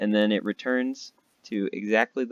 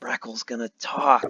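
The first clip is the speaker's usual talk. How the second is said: stage whisper loud enough to reach everyone. A gnome climbs onto a table and everybody goes silent: loud whisper. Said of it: "a loud whisper".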